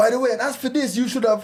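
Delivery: mock shouting, pitched very high. Retelling how a manager addressed a young employee, imitating a raised voice. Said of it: "he raised his voice".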